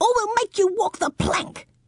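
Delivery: very high shrill yelling. Narrator reading a character's line to the pirates, yelled. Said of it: "yelled Baby Bumble".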